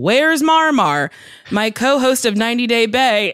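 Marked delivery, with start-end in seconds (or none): 0.0-1.1 acted-out, imitated scream. Retelling a person screaming at one of her shows: imitating someone screaming. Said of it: "who screamed".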